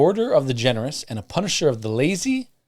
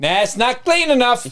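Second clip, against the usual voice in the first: put-on high-pitched New York accent; 10 semitones higher, 5 dB louder than usual. Voicing Frau Perchta judging a home as not clean: Frau Perchta with New York accent. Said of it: "Now she's from New York".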